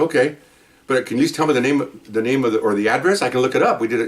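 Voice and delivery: ordinary talk, nothing marked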